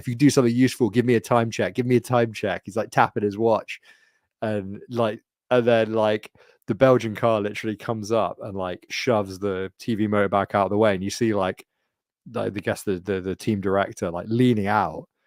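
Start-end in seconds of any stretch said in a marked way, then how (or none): none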